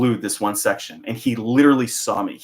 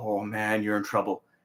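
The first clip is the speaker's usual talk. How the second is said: mock super serious tone, quieter; 7 dB quieter than usual. Retelling a coworker's warning on a phone call: imitating someone super serious. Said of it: "he sounds, like, super serious".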